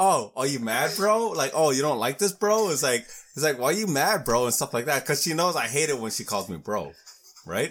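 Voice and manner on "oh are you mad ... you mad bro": goading, sarcastic, needling teasing tone. Recounting how she kept calling him bro to get him mad, imitating her mocking tease. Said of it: "she was fucking with me and she kept saying".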